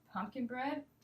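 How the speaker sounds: pitch rising on the words pumpkin bread. Listing three options for you today, rising pitch on pumpkin bread. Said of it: "Usually my voice will go up on the second option".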